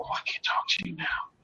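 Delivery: barely there, very quiet, hushed secretive whisper. Retelling a phone call where the woman answered: imitating someone whispering. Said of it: "Why are you whispering?".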